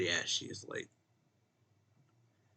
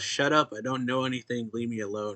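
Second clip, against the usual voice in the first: ordinary talk, nothing marked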